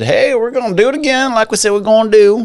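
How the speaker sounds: put-on Southern drawl, pitched very high. Retelling what the Federal Reserve Chair said: put-on Southern accent. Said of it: "I don't know why I went Southern with that".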